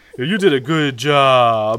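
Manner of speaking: slow, drawn-out, patronizing praise.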